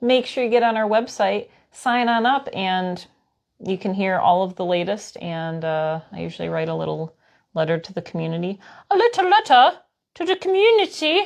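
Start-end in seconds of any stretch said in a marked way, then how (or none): 8.9-11.2 very high, bad put-on Scottish accent. Promoting the newsletter to listeners, in a bad Scottish accent. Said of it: "That was my Scottish accent".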